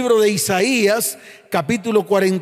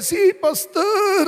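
put-on goat-like bleating voice, higher; 10 semitones higher than usual. Pastor retells a man answering his question about his wife, in a goat-like bleating voice. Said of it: "Así como con voz de cabra".

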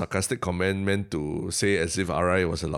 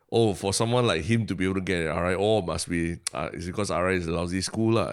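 plain

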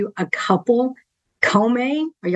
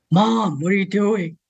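put-on low voice of 13-year-old. Parent imitates their 13-year-old son talking to his mom: imitating son's low voice. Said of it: "his voice is really low like this".

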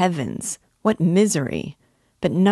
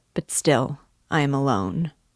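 ordinary delivery, nothing marked

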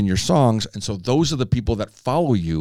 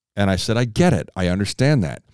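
plain

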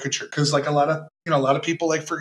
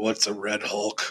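put-on flat deadpan, much lower and quieter; 6 semitones lower, 6 dB quieter than usual. Retelling an actor's reply to someone's question: Harrison Ford deadpan delivery. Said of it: "Harrison Ford deadpan delivery".

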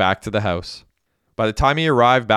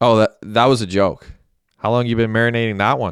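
ordinary delivery

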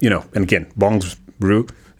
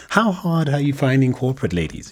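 very slow, high, patronizing put-on condescending voice; 6 semitones higher than usual. Slipping into a stereotypical voice to ask a question, put-on condescending voice. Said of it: "what was that change in voice?".

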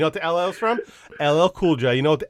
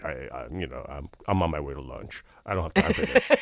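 very low, casual, unbothered murmur; 13 semitones lower, 8 dB quieter than usual. Retelling a colleague's calm reply to a stranger: imitating Keith Bernard's voice. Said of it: "in his very much Keith Bernard voice".

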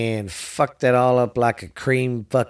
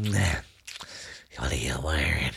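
put-on very low, leering, sickly, creepy old man croak; 9 semitones lower, 8 dB quieter than usual. Joking about sounding bad on the mic: creepy sick old man voice. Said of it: "sick old man going".

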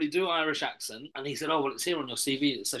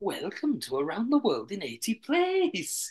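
bad put-on sing-song Welsh accent, pitched up; 6 semitones higher than usual. Asked by the other speaker to try a Welsh accent, Welsh accent. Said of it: "Do your Welsh accent".

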